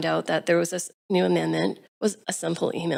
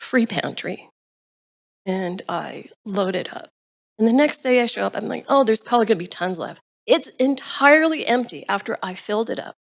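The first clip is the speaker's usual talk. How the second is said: talking on through tears, tearful crying; 3 semitones higher than usual. Speaker telling about struggling families in the neighborhood: crying while speaking. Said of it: "I'm crying".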